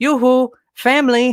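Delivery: mock high-pitched playful shout. A father retells his daughter waking him, retelling her yell into his ear. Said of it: "in my ear, she's yelling".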